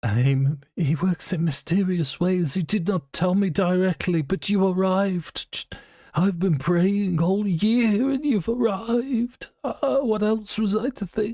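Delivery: sobbing, blubbering through the words, very high. Voicing a character who breaks down over his son: blubbering. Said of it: "he is still blubbering".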